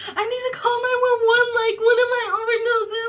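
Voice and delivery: put-on frantic freak-out, high and rushed. Retelling a friend's words while she freaks out: imitating a friend freaking out. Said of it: "she was freaking out".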